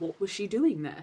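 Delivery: ordinary delivery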